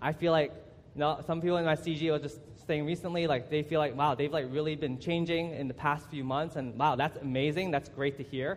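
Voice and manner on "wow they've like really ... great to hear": plain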